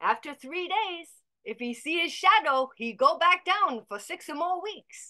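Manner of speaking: put-on New York accent. Retelling the punchline of a joke someone told: Lower East Side accent. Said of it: "Lower East Side kind of accent".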